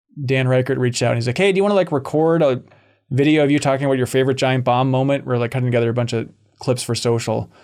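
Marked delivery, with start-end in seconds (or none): none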